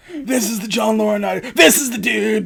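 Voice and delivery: put-on old man wrestler promo voice. Showing another speaker a Hulk Hogan impersonation: Hulk Hogan voice. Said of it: "my Hulk Hogan impersonation is".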